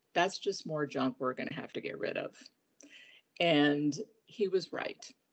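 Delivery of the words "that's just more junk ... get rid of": mock dry, flat, expressionless deadpan delivery. Retelling a son's blunt reply about unwanted little glasses: imitating a deadpan reply. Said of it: "with the most deadpan look on his face".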